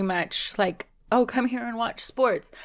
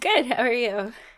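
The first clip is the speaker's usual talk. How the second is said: worn-out, strained voice on the verge of crying; 4 semitones higher than usual. Answering a greeting after a weekend at a cheer competition: voice sounding close to tears. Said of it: "you sounded like you were gonna cry".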